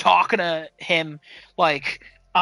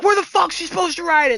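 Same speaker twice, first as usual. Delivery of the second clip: very high, furious, livid outburst; 12 semitones higher, 4 dB louder than usual. Retelling a dad yelling at a cop: imitating a livid dad.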